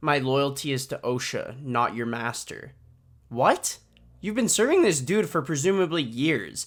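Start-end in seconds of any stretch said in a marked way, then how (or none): none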